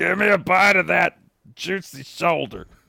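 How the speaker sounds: put-on drunk horse voice. Describing a horse in a picture, a host voices the horse: drunk hungry horse voice. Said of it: "what is the horse voice happening here?".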